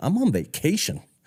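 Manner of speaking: mock very high, affronted, offended delivery. Retelling a lady's reply to being offered money: imitating an offended lady. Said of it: "the lady looks at me so offended and she's like".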